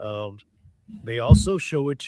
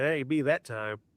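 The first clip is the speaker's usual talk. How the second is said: ordinary talk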